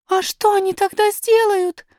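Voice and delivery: quivering, trembling, high-pitched voice. Narrator reads a princess asking a question, in a trembling voice. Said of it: "спросила Айрин дрожащим голосом".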